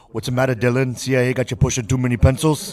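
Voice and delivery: loud, high-pitched, belted-out dramatic delivery. Taking a turn at the worst-impression game: Arnold impression. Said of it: "you wanna give it a go?".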